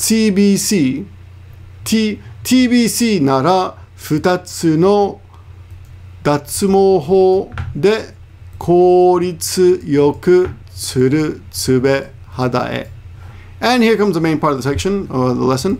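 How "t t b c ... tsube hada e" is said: every word spoken very slowly and carefully. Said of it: "So one more time".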